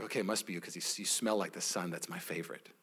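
put-on hushed, low, very soft old-sounding murmur.

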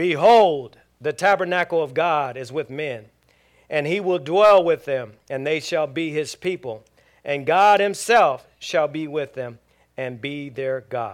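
booming, very loud proclaiming voice. Reading the great voice out of heaven aloud to the group, in a loud voice. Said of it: "i got to do the loud voice".

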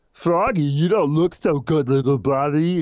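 stupid, dim-witted, dopey cartoon voice. The director asks for a stupid voice, so the cat's line is read: stupid Big the Cat voice. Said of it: "Just read this line and say it stupid".

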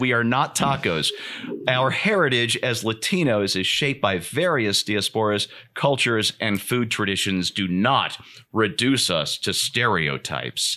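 ordinary talk, nothing marked

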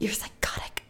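odd, weird, barely voiced, hushed whisper. Retelling how Sydney suddenly spoke during a back-and-forth, Sydney's weird whisper. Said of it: "A whisper".

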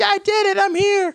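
very high-pitched, squeaky monkey voice. Retelling a scene where the monkey walks up: monkey voice. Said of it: "because that's a monkey voice".

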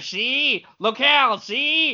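put-on old-time Chicago gangster voice. Suggesting how to add a certain flavor, demonstrating a 1920s Chicago gangster voice. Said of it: "use your 1920s Chicago gangster voice".

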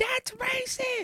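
put-on very high, childish little-kid outburst. Quoting a meme video of a kid, imitating a screaming little kid. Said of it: "is it racist to do the voice?".

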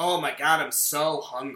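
deadpan, flat, low, zero emotion. Recalling a badly delivered line from a male cop, imitating a flat, emotionless line. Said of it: "with no emotion".

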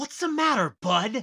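patronizing, talking-down voice. Imagining the wrestler trying to be nice: condescending MJF impression. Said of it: "he sounds, like, very condescending".

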